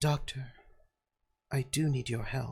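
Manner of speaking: soft half-whispered voice. Game master voicing a woman who half-whispers in the player's ear, half-whispering very quietly. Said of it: "she just whispers in your ear, very quietly".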